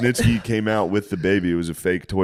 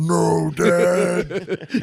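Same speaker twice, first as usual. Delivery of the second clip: put-on crying wrestler voice, higher; 11 semitones higher than usual. Retelling a giant wrestler at a funeral: imitating Big Show crying. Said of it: "crying, and he's like".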